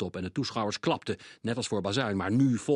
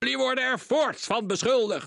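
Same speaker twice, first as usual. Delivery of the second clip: very high, bellowing roar; 14 semitones higher than usual. Mr. Krenk reads out further charges against the accused, roaring. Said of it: "brulde meneer Krenk".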